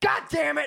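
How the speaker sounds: play-acted shrill, very high, loud, fed-up anger. Retelling own reaction when water spritz effects hit: imitating getting mad. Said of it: "I get mad".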